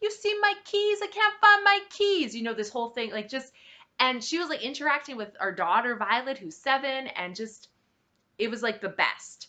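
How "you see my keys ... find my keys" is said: shrill, very high, put-on New York accent. A parent retells a woman dressed as a cab driver: imitating a New York accent. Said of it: "she's just like got this accent".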